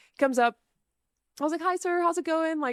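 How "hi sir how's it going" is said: put-on really friendly, high, girly voice. Retelling greeting a man who came up to her, imitating a friendly girly voice. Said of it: "that really friendly, like, girly".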